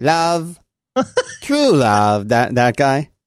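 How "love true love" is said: put-on lispy voice, pitched much higher. Suggesting a movie line to impersonate, in a lispy Princess Bride voice. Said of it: "he's got the kind of lispy voice".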